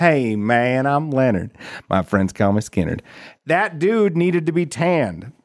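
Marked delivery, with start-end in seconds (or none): 0.0-3.0 put-on southern drawl. Playing a costumed character introducing himself, in Steve Jacobs voice. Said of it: "he needed a southern drawl. So I borrowed my friend Steve Jacobs' voice".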